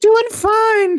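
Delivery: breathy, very high-pitched voice. Retelling a man's reply while he charged his phone, imitating a high-pitched breathy voice. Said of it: "what he was saying was so high pitched".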